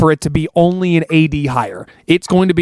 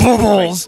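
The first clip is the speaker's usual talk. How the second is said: strained attempt at a mean, angry voice; 4 semitones higher than usual. Speaker takes a challenge to say a word angrily: trying to sound mean. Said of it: "Can't say bubbles in a mean way".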